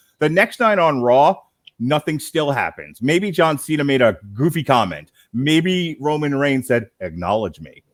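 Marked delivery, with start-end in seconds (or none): 7.0-7.7 put-on sexy wrestler voice, lower and quieter. Complaining that nothing happens on Raw, quoting Roman Reigns: imitating Roman Reigns' sexy voice. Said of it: "in his sexy voice".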